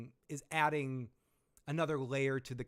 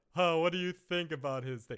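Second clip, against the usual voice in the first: chuckle running through the voice; 3 semitones higher, 4 dB louder than usual. Imitating how Otto says a line, with a chuckle in his voice. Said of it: "saying it with this chuckle in his".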